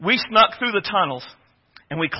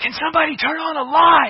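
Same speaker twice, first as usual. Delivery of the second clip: hushed, urgent whisper; 9 semitones higher, 3 dB louder than usual. Retelling a covert mission where a specialist asks for light: imitating a loud whisper. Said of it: "he loud whispers".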